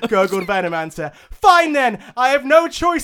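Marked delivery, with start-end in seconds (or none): 1.3-3.0 all-out high, loud scream. Narrator voicing Crystal Maiden interrogating the captive Venomancer: screaming. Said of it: "screamed Maiden".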